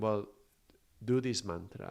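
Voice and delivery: ordinary talk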